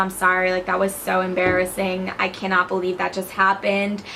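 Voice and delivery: plain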